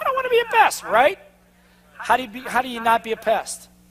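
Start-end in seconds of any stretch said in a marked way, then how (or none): 0.0-0.8 tiny, squeaky, very high-pitched voice. Acting out the little voice in someone's head: little inner voice. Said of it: "'Cause your little voice goes".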